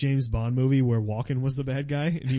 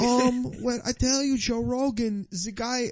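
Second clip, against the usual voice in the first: put-on Swedish accent, much higher; 10 semitones higher than usual. Mimicking how intimidating fighters talk on the mic: accidental Swedish accent. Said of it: "I'm turning into like a Swedish guy".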